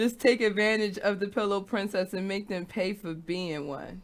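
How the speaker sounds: ordinary delivery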